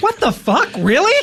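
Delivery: outraged disbelief, pitched very high. Reacting to the news that a podcast was canceled: acted shocked outrage. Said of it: "That was perfect".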